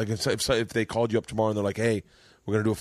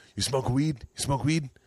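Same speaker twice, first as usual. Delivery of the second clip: put-on broken English with Vietnamese accent; 4 semitones higher than usual. Retelling what her friend Sandy asked her at the house, Sandy's Vietnamese accent. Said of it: "I'm going to do an accent".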